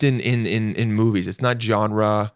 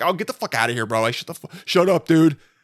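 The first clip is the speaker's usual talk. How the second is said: pitched-up, fake tough bravado; 6 semitones higher than usual. Retelling talking back to an older driver: retelling acting tough. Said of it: "tried to act tough and was like".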